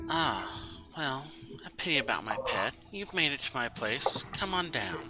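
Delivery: very soft, very quiet whisper. Game master voices an unseen presence as Faraday enters the room; whisper in your head. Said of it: "you hear a whisper in the back of your head".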